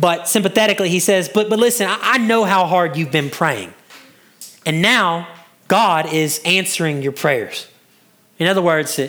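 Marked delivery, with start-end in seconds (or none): none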